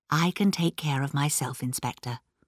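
ordinary delivery, nothing marked

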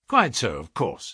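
ordinary delivery

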